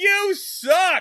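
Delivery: play-acted, very high, loudspeaker-style yell. Retelling a child shouting from a piano: shouting through a megaphone. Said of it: "get a little megaphone and go".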